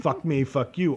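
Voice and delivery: ordinary delivery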